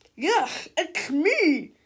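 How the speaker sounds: wet, angry, loud, high gurgling monster voice. Narrating a story, the monster answers the children who recognized him: gurgling angrily. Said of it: "gurgled the wet, jiggling monster angrily".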